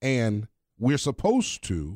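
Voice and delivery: supposed drawn out slow with wide pitch.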